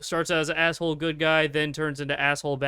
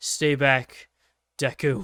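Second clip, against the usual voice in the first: frightened, terrified whisper. Retelling a scene where Bakugo is captured and warns Deku: Bakugo's frightened whisper. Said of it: "whisper in, like, the most frightened tone".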